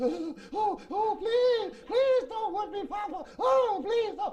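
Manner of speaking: put-on very high, slow, scared, frightened child voice. Retelling children on a couch begging not to be whipped: imitating scared kids pleading. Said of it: "all the kids sitting on the couch just shaking".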